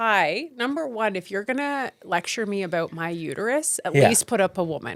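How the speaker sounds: usual speaking voice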